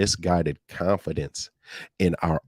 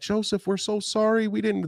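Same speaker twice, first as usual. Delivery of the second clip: put-on scared, frightened pleading tone, higher pitch. Retelling how scared brothers apologized on recognizing him: imitating scared apology. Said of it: "they're scared, they're like".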